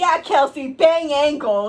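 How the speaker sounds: put-on very loud, drawn-out kid's yell. Retelling what a kid yelled after overhearing the speaker, retelling a kid's yell. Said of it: "he's just yelling".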